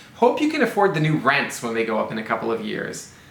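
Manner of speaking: usual speaking voice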